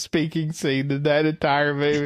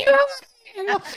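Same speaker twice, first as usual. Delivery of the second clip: mock, very high-pitched, frantic, shrieking scream. Retelling a student cheering in the arena: imitating someone screaming. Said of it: "you're just screaming out there".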